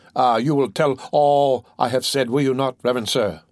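plain

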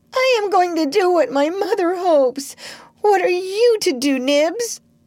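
hysterical crying out at a very high pitch. In front of the awed pirates, he calls out to the others; crying out hysterically. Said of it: "Tootles cried out hysterically".

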